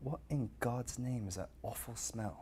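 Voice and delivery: put-on hushed, quiet British accent. Speaker retells what a man said on walking in, in a British accent. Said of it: "he had a British accent".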